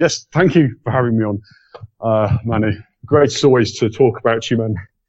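breathless, winded, out-of-breath voice. Guest thanking the host Manny before leaving, out of breath. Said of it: "I'm out of breath".

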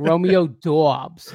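Boston accent, Bostonian pronunciation. Speaker repeats a name after a co-host notes his boston accent: boston accent. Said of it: "I always say it like that".

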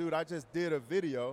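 normal talking voice

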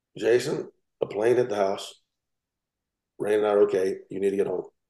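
mock eerily composed, matter-of-fact calm. Retelling his wife's phone call to him at the dealership, imitating an unbelievably calm voice. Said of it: "in an unbelievably calm voice says".

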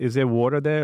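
strong New Yorker accent. Showing how people from new york say water: new york accent. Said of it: "I'm from New York, so we just say".

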